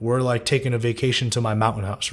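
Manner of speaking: ordinary talk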